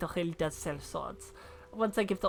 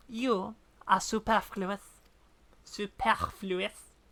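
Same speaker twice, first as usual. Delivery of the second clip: heavy put-on French accent, laid on hard. Playing a character in a scene, delivering the line in a French accent. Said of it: "Very hard in a French accent".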